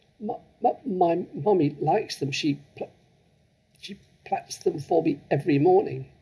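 stammering with fright. A child answers a woman ordering her pigtails cut off, stuttering with fright. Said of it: "managed to stutter".

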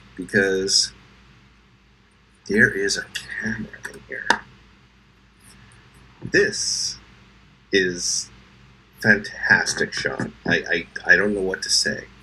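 slightly emotional. Opening a gift box on camera, a little choked up. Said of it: "I'm a little choked up".

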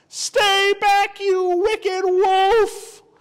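shrill, very high, loud yell, "wolf" stretched. A girl shouts at a wolf that is trying to eat her, shouting. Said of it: "he heard a shout".

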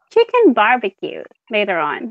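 ordinary talk

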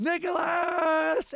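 acted, very high, endless drawn-out scream. Retelling a movie scene where young Nick Cage yells: imitating a long scream. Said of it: "he screams it forever".

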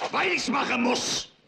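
loud shout at a high pitch. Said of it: "Was schreist du denn so".

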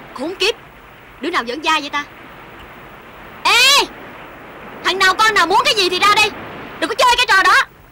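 loud shouting. A woman finds her clothes gone from the bank and yells at pranksters, shouting. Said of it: "làm gì cô em đã la hét ôm xồm dữ vậy hả?".

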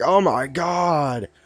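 mock-shocked gasp and exclamation, acted shock. Telling a comic story, voicing a woman's reaction, imitating a shocked gasp. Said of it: "and she's like".

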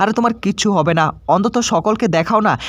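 ordinary talk

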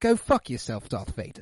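posh, royal-sounding voice. Reacting to a film scene, acting out Leia's line to Darth Vader, posh Princess Leia voice. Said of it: "where it's like so posh, royalty princess".

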